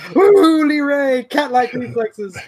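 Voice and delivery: acted-out very high screaming cheer, commentator-style yell. Retelling how someone reacted to a close call: imitating Randy Larson screaming. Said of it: "out there screaming".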